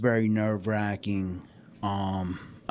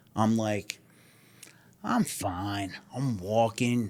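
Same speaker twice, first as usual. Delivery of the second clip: ordinary talk, nothing marked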